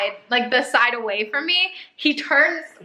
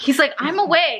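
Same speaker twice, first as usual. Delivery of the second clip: usual speaking voice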